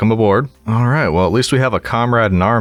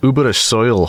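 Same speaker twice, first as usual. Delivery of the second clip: bad, terrible put-on Scottish brogue; 3 semitones higher than usual. Repeating an item's name while exploring, in a terrible scottish accent. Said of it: "That was a terrible accent".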